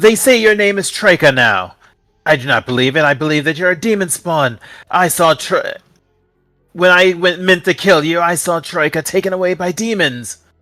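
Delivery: high-pitched, accusing, called-out voice. Voicing an NPC who calls out to a player character: NPC calling out accusingly. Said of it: "you hear a voice call out".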